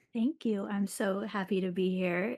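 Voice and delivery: smiling voice while talking. Thanking the other speaker for a lovely introduction, smiling while talking. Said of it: "I'm smiling from ear to ear".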